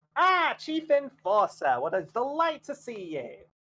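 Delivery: animated goblin voice, high and swooping. Voicing a grinning goblin who greets the Chief Enforcer: Apple Boy goblin voice. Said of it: "he kinda spreads his arms and says".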